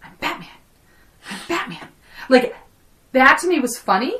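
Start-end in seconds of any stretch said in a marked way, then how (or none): 0.0-1.9 breathy whisper under the breath, said twice. Retelling a movie scene after she walks away: imitating a whisper.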